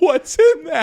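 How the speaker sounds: mock very high, very loud sobbing scream. Retelling a cabin pillow fight, quoting the kid being hit: imitating a kid crying. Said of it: "and he's crying".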